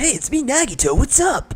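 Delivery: high, slow put-on voice. Trying out the voice planned for Nagito in Danganronpa 2, high-pitched Nagito voice. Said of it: "like the high-pitched Kai".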